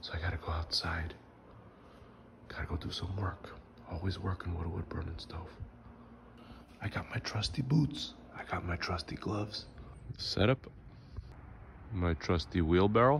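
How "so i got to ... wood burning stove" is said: soft whisper, under the breath. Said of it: "and I'm whispering".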